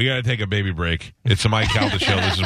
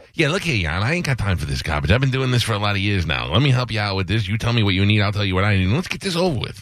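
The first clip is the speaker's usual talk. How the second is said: put-on rapid, fast-talking Chicago accent patter; 2 semitones higher than usual. Called to the bench as counselor, answer as a fast-talking Chicago guy. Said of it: "is a fast-talking guy from Chicago".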